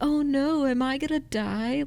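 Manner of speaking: high, slow, taunting mock cheerleader voice. Retelling a Scary Movie scene, imitating a mocking cheerleader. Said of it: "the cheerleader just keeps mocking him even in her death".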